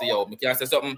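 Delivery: ordinary talk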